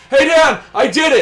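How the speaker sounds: shouted, very loud and very high-pitched. Retelling a running joke about a friend in a game: imitating a friend shouting. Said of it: "he's gonna shout".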